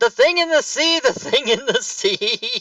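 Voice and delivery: very high, shrill, harsh screaming voice. Running away in character, screaming and yelling: screaming in bitch voice. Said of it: "in my best bitch voice".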